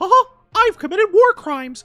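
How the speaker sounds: very high, loud, squeaky mouse voice. Explaining which mouse his laugh references, giving an example: Steamboat Willie voice. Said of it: "it's obviously a Steamboat Willie reference".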